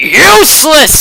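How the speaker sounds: high-pitched, furious, angry bellowing roar. Voicing a character who is angry at the players: roaring. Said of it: "he roars".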